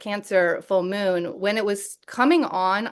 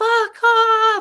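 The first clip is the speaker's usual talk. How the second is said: very high, raised, panicked freaked-out yell; 14 semitones higher, 7 dB louder than usual. Retelling a driver's reaction after a near miss: imitating someone freaking out. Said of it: "just freaking out".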